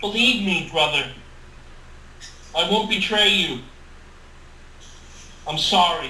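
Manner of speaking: normal talking voice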